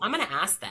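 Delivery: ordinary delivery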